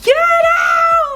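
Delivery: play-acted tearful crying voice, very high-pitched. Recounting breaking down at a wedding as everyone pulled them out; retelling crying words. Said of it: "like crying".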